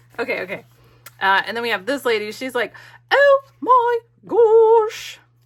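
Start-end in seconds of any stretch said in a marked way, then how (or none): 3.1-5.2 put-on British accent, excited, very loud, gosh drawn out. A speaker voices a lady character in a British accent. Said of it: "I don't know why she's British".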